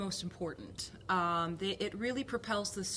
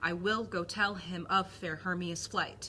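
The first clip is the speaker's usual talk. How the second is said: da-dum beat stressing will, tell, fair, flight. Reading the first line in iambic pentameter: steady iambic beat. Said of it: "do it in the heartbeat of the iambic pentameter".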